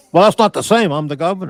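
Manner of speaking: mock, angry, temper-losing, flipping-out voice. Imagining the governor's reply to a reporter: imitating Cuomo flipping out. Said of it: "I watch him fucking flip out".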